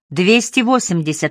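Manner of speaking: ordinary delivery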